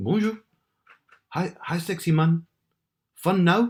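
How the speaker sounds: put-on French accent, very high. Speaker recounts a morning message, reading it in an attempted French accent.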